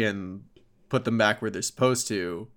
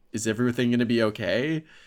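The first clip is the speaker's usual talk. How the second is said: ordinary talk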